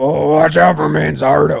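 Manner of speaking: deep, rough, gruff grizzly voice. Asked by the other speaker to say it that way, use a deep, grizzly Phil Nevin voice. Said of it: "Say it in that like deep grizzly voice you got".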